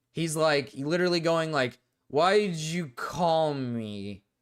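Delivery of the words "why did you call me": mock silly drunk-sounding voice. Imitating how a drunk caller sounded: imitating a drunk caller's silly voice. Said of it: "his voice sounds, like, silly".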